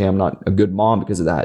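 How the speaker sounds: normal talking voice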